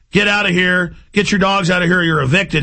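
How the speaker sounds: ordinary talk, nothing marked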